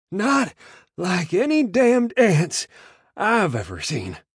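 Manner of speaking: breathless wheezing, high and loud. Narrating a man who stumbles to a halt near two men: wheezing. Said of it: "he wheezed".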